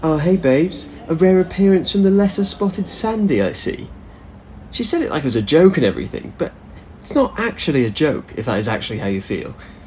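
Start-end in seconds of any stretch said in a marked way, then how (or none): 0.0-3.9 big fake cheeriness, pitched up. Retelling what a flatmate said when she got home, imitating Rose's fake cheeriness. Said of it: "with this big fake cheeriness and said something like".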